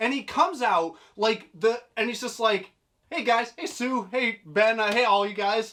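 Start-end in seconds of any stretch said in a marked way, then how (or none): 3.1-5.7 cocky put-on hero voice, higher pitch. Retelling the comic scene where Cyclops walks out: cocky Cyclops voice. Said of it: "he's the cockiest son of a bitch in it".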